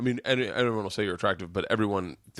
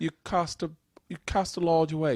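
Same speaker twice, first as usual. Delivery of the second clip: condescending put-on British accent, pitched higher; 8 semitones higher than usual. Quoting what a man said to the speaker, imitating a British accent. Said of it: "He said it in a British accent".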